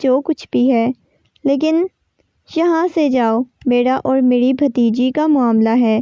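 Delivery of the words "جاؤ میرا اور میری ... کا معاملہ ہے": ordinary delivery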